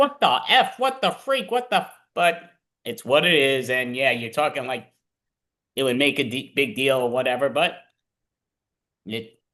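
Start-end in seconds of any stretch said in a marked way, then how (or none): 0.0-1.9 put-on, very high, shrill yelling outburst. Retelling yelling at sports on TV: imitating yelling at sports. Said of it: "I yell at it many times".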